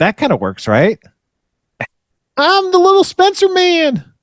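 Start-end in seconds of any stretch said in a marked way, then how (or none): 2.4-4.0 high, small, cartoonish gnome character voice. Trying out character voices, the speaker does the gnome voice. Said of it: "that does kind of sound".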